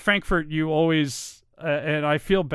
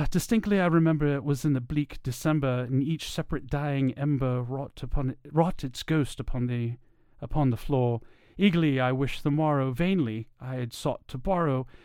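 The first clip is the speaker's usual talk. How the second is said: attempted British accent; 5 dB quieter than usual. Reading a poem aloud, trying out an attempted british accent. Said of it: "I'll see what I can do as far as a British accent".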